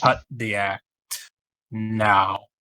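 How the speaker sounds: flat, cold deadpan with drawn-out "now". Voicing a character confronting a disguised stranger: deadpan. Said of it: "With a deadened stare".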